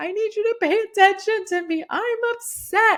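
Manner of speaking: mock big wailing sobs, pleading, very high, very loud. Speaker retells crying to get a sleepy partner's attention; retelling loud sobbing. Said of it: "I'm like crying loudly, these big sobs".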